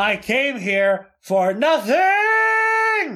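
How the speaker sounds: very high, loud, very slow, swooping, drawn-out outburst. Retelling a man's outburst at the counter after failing to get his free movie: really loud. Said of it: "really loudly went".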